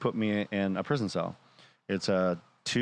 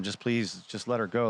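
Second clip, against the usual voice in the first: imitated begging, pleading tone. Retelling being taken to prison with a wife: retelling own begging. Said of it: "I'm begging them".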